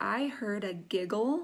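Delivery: normal talking voice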